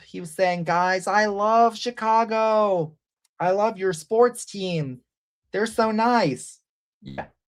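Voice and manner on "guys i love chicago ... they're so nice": mocking lisp, higher pitch. Recounting a bishop's speech, the speaker does a lisping Bishop Hicks impression. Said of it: "he was talking with the nice lisp".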